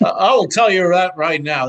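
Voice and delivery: very loud, booming, belted at full volume. Doing a Joe Judge impression after saying a hoarse voice sounds like him. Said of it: "It sounds like Joe Judge".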